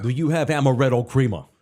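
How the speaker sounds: loud put-on New York accent. Retelling what a man asked when he went to get coffee, in a New York accent. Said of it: "in that, New York accent".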